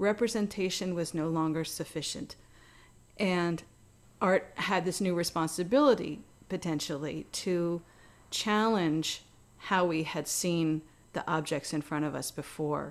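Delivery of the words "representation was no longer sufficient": plain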